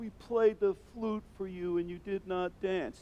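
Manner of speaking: kind of sarcastic, reproachful, slightly high tone. Explaining a gospel passage, acting out Jesus's words: imitating sarcastic Jesus. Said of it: "Jesus being kind of sarcastic".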